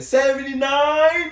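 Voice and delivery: high, slow, shocked, disbelieving shout.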